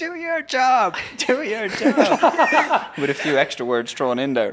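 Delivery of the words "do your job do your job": acted-out screeching, very high and slow, each word. Retelling screaming at a man who stopped to rest, retelling own screaming. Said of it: "I just started screaming at him".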